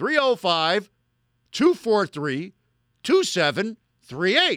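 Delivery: slow, slowed-down delivery. Giving a phone number in an ad, repeating it for Jets fans: said slowly. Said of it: "I'll say it slow".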